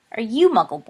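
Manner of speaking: haughty sneer. A haughty boy questions another boy, asking with a sneer. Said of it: "he asked with an unconscious sneer at the word".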